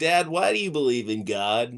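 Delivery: put-on young seven-year-old kid voice, pitched low. Acting out a seven-year-old questioning a dad: acting as a seven-year-old. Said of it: "a seven-year-old and saying".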